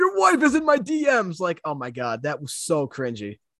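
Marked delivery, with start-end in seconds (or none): 0.0-1.4 play-acted, very high, shrill shouted yell. Retelling how a fighter yelled at his opponent: imitating Conor McGregor yelling. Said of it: "he starts yelling to Dustin".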